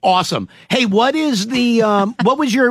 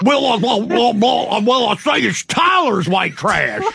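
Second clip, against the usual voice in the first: cartoon rooster voice, pitched higher; 2 semitones higher than usual. Teasing about Tyler, speaker does a Foghorn Leghorn voice. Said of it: "That sounds like Foghorn Leghorn".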